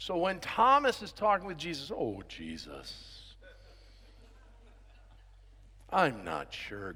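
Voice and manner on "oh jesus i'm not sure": very quiet, slow, gloomy whisper. A speaker voices Thomas talking with Jesus, in an Eeyore voice. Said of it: "Eeyore talked like this".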